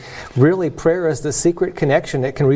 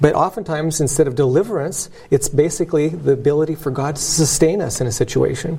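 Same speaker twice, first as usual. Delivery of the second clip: usual speaking voice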